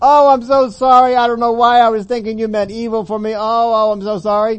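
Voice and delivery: very high, very loud tearful wailing. Imitating people who repent, with tears: imitating a tearful apology. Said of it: "with tears".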